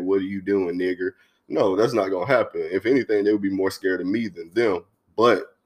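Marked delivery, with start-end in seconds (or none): none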